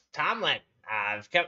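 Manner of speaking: yelling in goblin voice. Voicing a goblin who calls out for another character: goblin yelling out. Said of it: "Goblin yells out".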